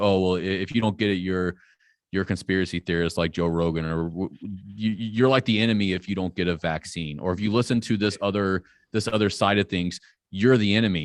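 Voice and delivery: ordinary talk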